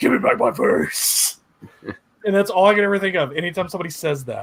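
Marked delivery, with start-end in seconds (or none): 0.0-1.4 raspy, rough, creaky voice. Quoting a line from the Watchmen movie in Jackie Earle Haley's Freddy Krueger voice. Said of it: "his Freddy Krueger voice just goes".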